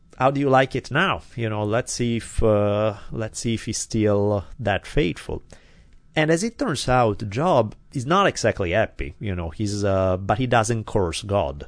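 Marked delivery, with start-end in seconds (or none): none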